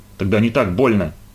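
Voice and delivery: ordinary delivery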